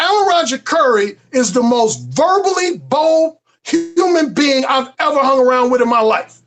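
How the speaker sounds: normal talking voice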